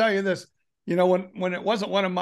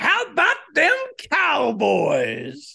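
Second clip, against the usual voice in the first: slow, stretched-out, swooping, pitched-up delivery; 8 semitones higher than usual. Doing a best impression of Stephen A Smith: Stephen A Smith impression. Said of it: "let me do my best Stephen A Smith".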